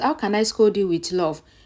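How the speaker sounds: plain reading voice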